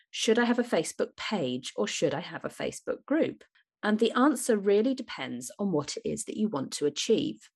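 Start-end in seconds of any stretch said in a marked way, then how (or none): none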